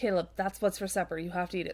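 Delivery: ordinary delivery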